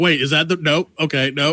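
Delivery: ordinary talk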